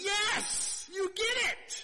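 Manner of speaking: very high, loud, thrilled excited cry.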